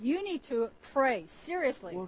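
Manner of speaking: severe, very stern, reproving tone. Quoting what a brother once told him about his prayer life, retelling a stern rebuke. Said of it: "And Brother Wei said to me very sternly".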